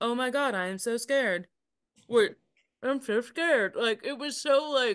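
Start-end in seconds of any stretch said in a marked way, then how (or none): 0.0-3.7 mocking put-on bad acting voice, higher pitch. Mocking a bad acting scene from a horror sequel: imitating Courtney Cox's bad acting. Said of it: "so hard to see her be like".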